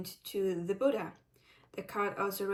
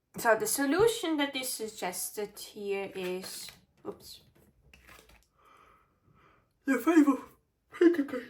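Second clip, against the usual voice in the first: speaking through yawns, higher and louder; 3 semitones higher, 5 dB louder than usual. Reading tarot cards for pile number three, yawning while speaking. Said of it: "I'm so sorry that I'm yawning so much".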